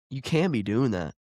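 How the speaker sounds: normal talking voice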